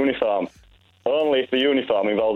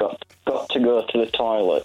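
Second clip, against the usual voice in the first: mock speech through gritted, clenched teeth. Retelling excusing himself after eating hot chicken, through gritted teeth. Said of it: "through gritted teeth and a mouth that was near enough on fire".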